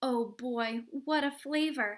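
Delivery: plain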